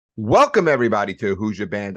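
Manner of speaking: full-on loud shouted host yell. Welcoming everybody to the show at the start: yelling. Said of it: "I don't know why I'm yelling again".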